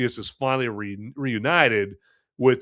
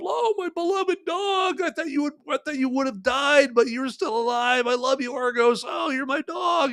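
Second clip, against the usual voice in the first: fake tearful, pitched-up, choked-up voice. Acting out how the reunion scene should have played: mock choked-up Odysseus. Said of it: "one tear and get kinda choked up".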